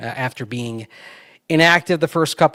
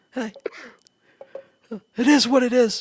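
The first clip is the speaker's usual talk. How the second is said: very high, weary, scratchy, rasping voice; 11 semitones higher than usual. Doing a requested coach impression, weary and scratchy: Rizzi impression. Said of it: "That's really good".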